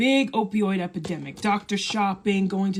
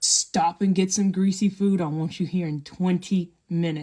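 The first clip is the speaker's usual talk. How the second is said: put-on grave, stern, fatherly, dead-serious tone. Retelling what his father told him on the phone, in his most serious voice. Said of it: "with the most serious voice ever".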